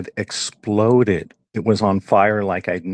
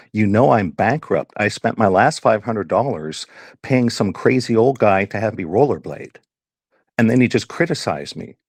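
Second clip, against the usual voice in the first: ordinary talk, nothing marked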